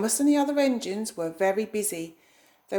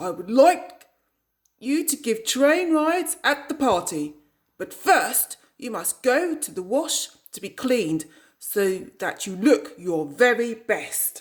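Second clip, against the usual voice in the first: big, booming, resounding voice; 4 dB louder than usual. Reading a children's story, voicing the controller speaking to a train engine, booming voice. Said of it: "he boomed".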